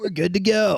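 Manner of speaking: loud infomercial pitchman voice. Doing a joke infomercial pitch: Billy Mays impression. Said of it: "is that what he sounded like?".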